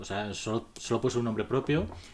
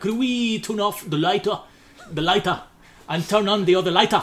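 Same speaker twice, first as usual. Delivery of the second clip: put-on Japanese accent in English; 6 semitones higher, 4 dB louder than usual. Speaking to a train conductor so he understands: English with Japanese accent. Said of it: "inglés con acento japonés".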